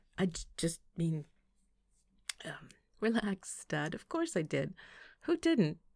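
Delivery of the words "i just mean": flustered, stammering voice. Narrator reads his embarrassed reply to her, flustered stammer. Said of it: "he stammered and began to look a little flustered".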